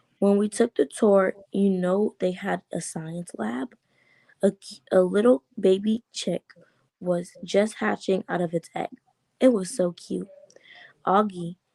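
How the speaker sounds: usual speaking voice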